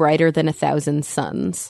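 normal talking voice

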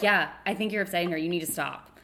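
put-on dead serious tone. Retelling the mother's sudden comment, pausing first: imitating mom, dead serious. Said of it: "dead serious".

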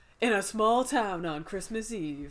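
movie-trailer narrator, announcer delivery. Talking about a Christmas horror movie, in movie trailer voice. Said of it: "movie trailer voice".

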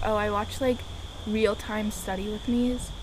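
plain

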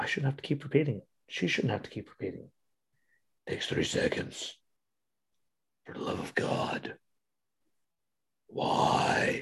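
breathy, hushed, whispered dark-hero voice. Speaking to listeners on a Friday, talking like Batman. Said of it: "now I'm done talking like Batman".

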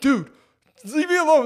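acted panicky freaking out. Retelling a stranger popping up over a bathroom stall, retelling freaking out. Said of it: "Like I freaked out".

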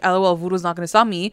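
ordinary talk, nothing marked

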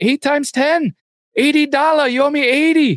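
mock yelling. Retelling a woman demanding payment from a man, imitating someone yelling. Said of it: "She just kept yelling".

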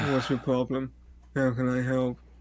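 level, lifeless, dead flat monotone. Mimicking a terrible actor's line when he pulls up: flat monotone delivery. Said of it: "he's in the most monotone voice possible, just goes like".

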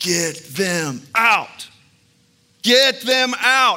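very slow, high, drawn-out, rising, full-lung scream. Retelling how the grandmother screamed at the visitors: imitating a scream. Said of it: "she started screaming to the top of her lungs".

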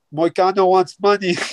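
speaking in broken English. Praising a fighter's post-fight speech, quoting him in a broken-english accent. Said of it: "like broken accent".

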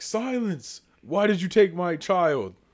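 big, loud, swooping alien voice. Retelling the scene where Melvin, the dad alien, demands his child back; Melvin's big voice. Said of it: "He's using his big voice".

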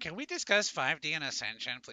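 put-on whining voice. Reading out Robert's question about 5D and ascension, mock-whiny Robert impression. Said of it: "I'm putting the whiny tone on it".

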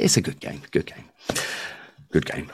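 whispered, hushed, murmuring sports commentator voice. Chatting about a game played as a young lad: whispery sports commentator voice. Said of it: "Getting all whispery down the mic".

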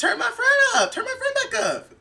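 high, wide laughing squeal with giggling.

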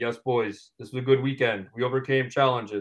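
flat monotone, dead level, no rise at all. Talking about a driver after races, imitating Max's monotone voice. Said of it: "otherwise he's very monotone".

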